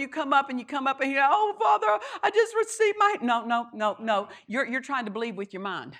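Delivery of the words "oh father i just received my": very high, tearful voice with a tear in it. Demonstrating how someone comes up and speaks, with a tear in the voice. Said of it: "you say something with a tear in your voice".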